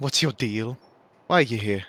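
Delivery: stern, firm, severe no-nonsense tone. Player's character questions a cat, speaking sternly. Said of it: "sternly say to the cat".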